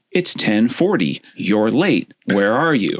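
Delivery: mocking, teasing, sarcastic needling jab. Retelling a text from Bruce about being late: imitating Bruce's sarcastic text. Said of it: "Bruce sarcastically says".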